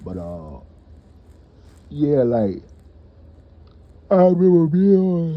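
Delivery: talking through a yawn. Starting a basketball court story, speaking through a yawn. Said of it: "Excuse me, I'm yawning".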